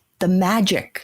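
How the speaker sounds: ordinary talk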